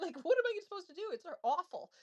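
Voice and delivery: high, panicked, desperate pleading woman's voice.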